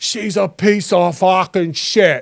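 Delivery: put-on slow, drawn-out drawl in Boston accent. Retelling what Dave Portnoy said about Angel Reese: Dave Portnoy Boston accent. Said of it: "his, like, racist Boston accent going".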